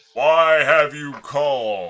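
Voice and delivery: thundering voice. Voicing a man who looks down at Rook; thundering voice. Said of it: "he says with a thundering voice".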